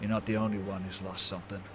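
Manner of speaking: muttered under the breath, to oneself. A narrator voices a man gazing at a drawing in his cigar case, muttered under his breath. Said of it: "under his breath he's like".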